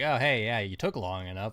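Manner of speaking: plucky, sarcastic voice.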